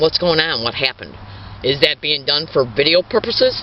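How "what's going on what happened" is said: ordinary talk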